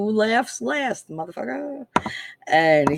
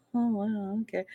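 put-on gentle, soft-spoken Minnesota murmur; 7 dB quieter than usual. Recalling how the husband usually reacted: imitating soft-spoken Minnesota husband. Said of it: "very soft-spoken Minnesota boy".

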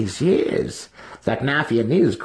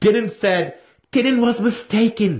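frantic, panicked, very high-pitched voice; 11 semitones higher than usual. Still held with a sword to his throat, he replies to his captor frantically. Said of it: "Drizzt replied frantically".

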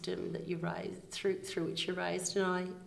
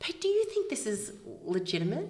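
excited, animated calling out with swooping pitch; 4 semitones higher than usual. Recalling reading about a nomination, the speaker retells screaming out to pete. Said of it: "I just screamed out to Pete".

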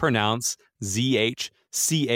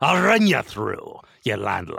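put-on pirate character voice; 3 semitones lower than usual. Host opens an interview by addressing the guest in a pirate voice. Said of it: "Jared's going to do the entire interview in a pirate voice".

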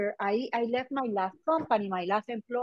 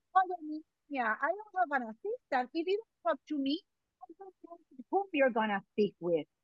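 put-on rapid, rattled-off speech in a Cuban accent; 4 semitones higher, 4 dB quieter than usual. Speaker retelling what Dr. De Posada told him when asked for his assistant, Cuban accent. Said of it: "He told me with his Cuban accent".

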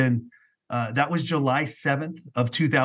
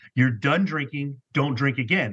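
acted forceful, commanding voice. Recounting hearing God, the speaker quotes God in a strong, authoritative voice. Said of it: "strong and authoritative".

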